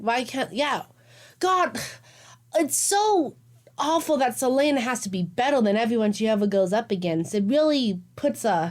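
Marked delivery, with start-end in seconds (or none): 1.4-8.7 dripping, mock-serious, mocking sarcastic tone. Discussing a book with another speaker: sarcastic. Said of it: "I'm just being sarcastic".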